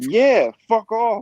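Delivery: very high, furious, pissed-off retort. Retelling answering a field official's question after being pissed off, acting out an angry retort. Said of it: "I'm all pissed off, all mad".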